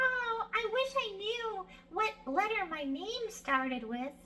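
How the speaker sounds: frog puppet voice. Demonstrating a puppet introduction of a letter for kids, Frankie Frog puppet voice. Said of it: "let's pretend I have Frankie Frog on my arm".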